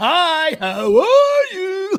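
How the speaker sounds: very high, overblown, hammy delivery. Describing actors who overact, showing how not to say a simple line, overacted line reading. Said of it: "They started to overact".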